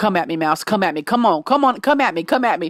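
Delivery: mock taunting, challenging voice. Retelling how a man tapped a broom at a rodent, retelling a taunt. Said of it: "tapping that broom on the floor like".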